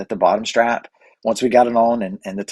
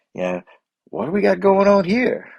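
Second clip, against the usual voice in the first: put-on very high-pitched, swooping Canadian accent; 10 semitones higher than usual. Retelling hearing an old friend speak up, in Scott Pitts's old Canadian accent. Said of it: "I hear this old Canadian accent".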